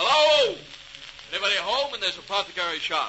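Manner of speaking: loud calling out. Calling into an apothecary shop to see if anybody's home: shouting. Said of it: "Why must you shout like that?".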